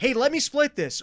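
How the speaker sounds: mock uneasy and insistent, very high, loud, anxious. Imitating a date offering to split the bill: offer with a little angst. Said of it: "if there's a little bit of angst in".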